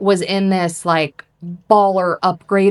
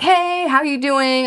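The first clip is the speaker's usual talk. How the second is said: put-on, high, all-smiles cheerful voice; 7 semitones higher than usual. Retelling how the hotel lobby worker greeted the speaker, imitating a smiling, happy greeter. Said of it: "Like all smiling and happy".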